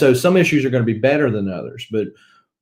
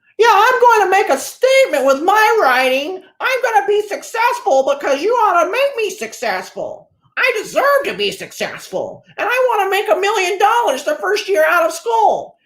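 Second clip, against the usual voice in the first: put-on fresh-out-of-school kid voice. Mocking people just out of school, doing an impression of kids these days. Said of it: "that was my impression of kids these days".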